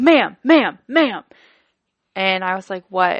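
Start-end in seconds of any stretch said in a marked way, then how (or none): 0.0-1.2 voice getting really loud, high, repeated. Retelling a phone call where the speaker started to cry, imitating a man getting loud. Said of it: "his voice got really loud".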